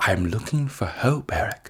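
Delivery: very quiet, barely voiced, hushed, solemn whisper. Imitating Patrick Stewart as Professor X in a whisper: Patrick Stewart as Professor X whisper. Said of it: "Patrick Stewart goes".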